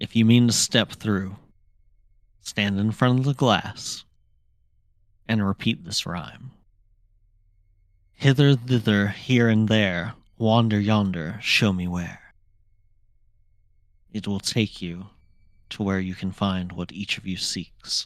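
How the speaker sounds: soft, quiet, hushed speech. A narrator voices a character giving the party instructions at a mirror, quietly. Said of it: "And he says quietly".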